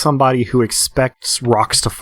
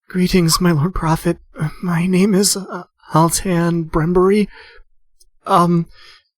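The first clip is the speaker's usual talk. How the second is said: high, trembling, wavering voice; 8 semitones higher than usual. Narrator voices a kneeling woman addressing the Lord Prophet, quavering voice. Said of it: "says in a quavering voice".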